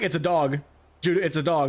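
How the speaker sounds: ordinary talk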